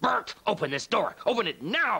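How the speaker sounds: high, loud, demanding yell.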